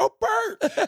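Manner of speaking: high-pitched, all-excited tone. Retelling his blind wife greeting an unseen visitor: imitating someone excited. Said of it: "all excited".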